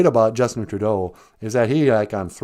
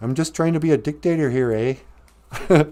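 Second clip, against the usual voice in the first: put-on strong Canadian accent, higher pitch; 5 semitones higher than usual. Doing an impersonation of a politician: Justin Trudeau Canadian accent. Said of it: "That's my impersonation of uh, Justin Trudeau".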